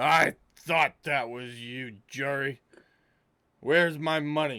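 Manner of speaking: put-on loud, high-pitched, drunken brutish orc voice. Voicing a half-orc who grabs the listener's character, in a drunk half-orc voice. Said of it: "Clearly very intoxicated".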